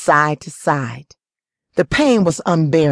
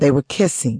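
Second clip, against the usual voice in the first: ordinary delivery, nothing marked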